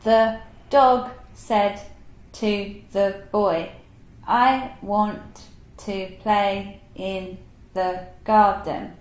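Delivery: very slow, halting, choppy word-by-word beginner reading. Pretending to be a child who can't read well, choppy word-by-word reading. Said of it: "imagine that I'm a child and I do not know how to read".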